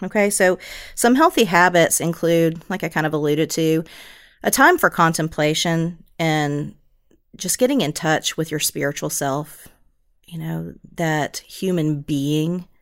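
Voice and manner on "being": stress placed on the word "being". Describing healthy habits for emotion regulation: stress on BEING. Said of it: "I emphasize the word being".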